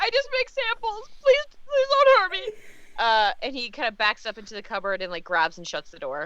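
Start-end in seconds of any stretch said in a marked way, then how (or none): 0.0-2.5 very high, cowering, frightened begging. Voicing a cornered cook flattened against a wall: frightened pleading cook. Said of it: "so you kinda lead him towards, like".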